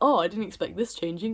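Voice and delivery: ordinary delivery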